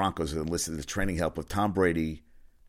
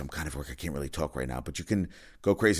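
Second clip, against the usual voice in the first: put-on whispering; 3 semitones lower, 4 dB quieter than usual. Retelling what a caller said while at work: imitating someone whispering. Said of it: "got a whispered voice".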